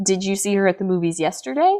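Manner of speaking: tune climbing at the end on yesterday. Explaining question markers with an example question, rise on yesterday. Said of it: "with a rise".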